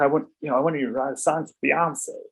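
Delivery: bad put-on American accent. Retelling a meeting on the Def Jam floor, quoting Tata Smith, terrible American accent. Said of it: "Pardon my terrible American accent".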